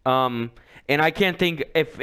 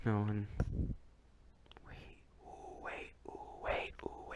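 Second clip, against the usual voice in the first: very quiet whisper under the breath; 7 semitones lower, 20 dB quieter than usual. Suddenly realizing an answer, the speaker speaks, whispering. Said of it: "I don't know why I'm whispering".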